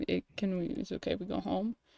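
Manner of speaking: soft, hushed half-whisper under the breath. Retelling how one asks the other person to go home: imitating a half-whisper.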